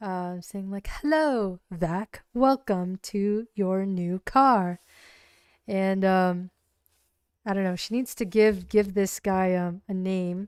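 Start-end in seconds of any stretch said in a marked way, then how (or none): 0.9-4.8 slow, courteous, polite British male voice. Imagining the new car's AI helper greeting its owner, very nice British male voice. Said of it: "a very nice British male voice".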